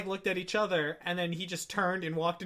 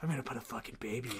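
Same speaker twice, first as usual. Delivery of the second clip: close, hushed, teasing whisper; 7 semitones lower, 8 dB quieter than usual. Retelling a joke told into a partner's ear: imitating own whisper. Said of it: "whisper into her ear".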